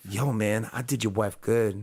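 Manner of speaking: put-on creepy flirting voice. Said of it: "He's like".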